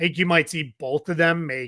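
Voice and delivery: normal talking voice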